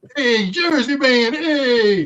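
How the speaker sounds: Brooklyn accent yelling, drawn-out hey. Talking about new york and jersey accents, calling to a jersey guy: brooklyn accent yelling. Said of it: "That's a Brooklyn yelling at a Jersey guy".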